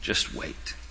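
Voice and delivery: hushed, breathy whisper.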